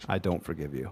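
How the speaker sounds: put-on earnest delivery. Acting out a character's line after looking at the key, mock very sincere voice. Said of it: "in a very sincere voice".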